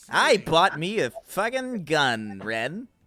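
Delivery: slow, drawn-out cartoon voice with wide swooping pitch. Showing how a cartoon character sounds: imitating Stimpy as slower SpongeBob. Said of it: "He goes like".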